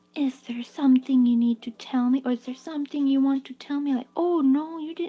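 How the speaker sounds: put-on weird, creepy, high-pitched baby talk. Recalling how middle school teachers talked to students: weird creepy baby voice. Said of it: "they talk this weird, creepy baby voice".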